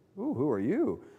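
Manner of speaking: curious, a little bit intrigued. Trying out different inflections of a line, a little bit interested. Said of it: "like a little bit interested in what's going on here?".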